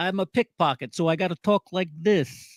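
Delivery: overdone, painful, bad exaggerated New York accent. Mocking a bad-guy pickpocket role: exaggerated New York accent. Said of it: "he has such a painful New York accent in this".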